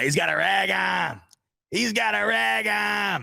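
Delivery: put-on thick Boston accent, very drawn out, slow, high. Quoting a caller to a boston radio station, in a thick boston accent. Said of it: "that incredible thick Boston accent".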